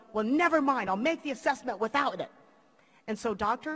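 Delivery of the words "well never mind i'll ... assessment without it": really gruff, rough, angry man's voice. Retelling what a man said after throwing something, in a really gruff voice. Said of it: "the voice goes really gruff".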